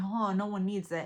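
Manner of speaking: usual speaking voice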